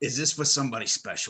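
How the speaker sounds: put-on Brooklyn accent. Retelling what the necklace seller asked while leaning in close, in a Brooklyn accent. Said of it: "He's got a Brooklyn accent".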